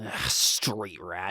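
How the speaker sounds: growling contempt. Voicing a character who snarls at an urchin: snarling. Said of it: "snarls a little bit".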